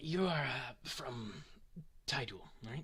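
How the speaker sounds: quiet whispering. A game master voices a man who approached the player's character, whispering. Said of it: "He starts to whisper".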